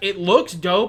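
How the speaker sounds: ordinary delivery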